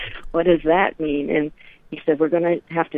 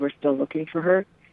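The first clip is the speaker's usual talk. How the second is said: put-on voice choking up with emotion. Retelling a man's words at a dance: imitating someone choking up. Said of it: "really choking up in his throat when he said".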